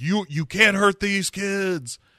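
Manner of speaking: put-on very high, shrill, frantic hollering. Recounting a story scene, retelling Locke's yell. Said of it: "Locke starts yelling".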